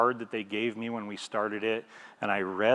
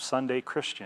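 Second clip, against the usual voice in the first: ordinary delivery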